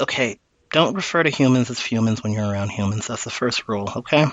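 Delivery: deflated, defeated, hushed half-whisper. Voicing Quentin, who sighs, defeated, and gives the first rule: half-whispering.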